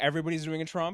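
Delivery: plain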